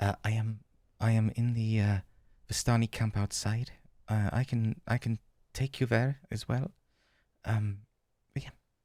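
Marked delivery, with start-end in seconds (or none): 0.0-6.7 whispering, hushed, in a put-on character voice. Voicing a tired woman leaning close to a player: whispering in character. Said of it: "whisper at, to, to you a little bit".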